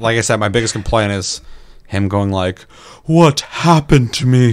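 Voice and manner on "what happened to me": parched, dry, winded, breathless, drawn-out voice. Mocking a game character's line while complaining about his dialogue, imitating a dry-throated breathy voice. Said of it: "you sound like you've been breathing so hard that your throat's a little dry".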